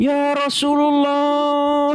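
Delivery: mock-crying, tearful, put-on pleading voice. Speaker acts out how Muslims pray while crying, imitating tearful prayer. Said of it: "Sambil nangis-nangis".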